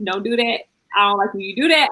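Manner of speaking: mock even, calm, firm, authoritative stern tone. Retelling what her man says when she is out of line: imitating a stern, authoritative partner. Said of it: "I can hear the authority in his voice".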